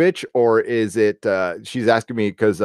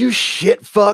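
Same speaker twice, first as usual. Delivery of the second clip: mock angry voice, much higher pitch; 11 semitones higher, 3 dB louder than usual. Retelling a driver he cut off who pulled up beside him; imitating an angry driver. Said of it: "he's all pissed".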